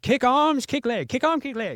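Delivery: put-on very high, loud, swooping, sing-song Thai accent. Quoting Cobb, a man from Thailand, the speaker imitates Cobb's Thai accent. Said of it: "don't get mad at me for using this accent".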